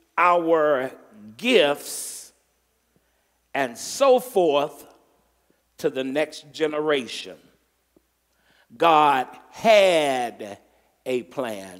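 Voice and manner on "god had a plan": the word had punched with strong stress. A preacher asking the crowd to shout, strong stress on 'had'. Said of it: "I'm going to put emphasis on two words... God had, H-A-D, emphasis on that word".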